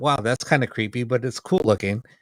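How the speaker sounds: normal talking voice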